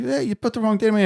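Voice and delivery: very high, shrill scream. Retelling a customer calling about a wrong tattoo date: imitating a customer screaming. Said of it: "he calls me up screaming".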